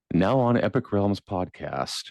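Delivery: calm public radio announcer voice. Trying to put a viewer to sleep: NPR voice. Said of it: "trying to get my N P R voice going here".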